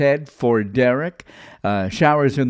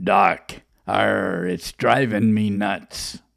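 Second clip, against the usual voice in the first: joking pirate voice, lower pitch; 4 semitones lower than usual. Telling a joke, delivering the pirate's punchline to the doctor, in a pirate voice. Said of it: "And the pirate says".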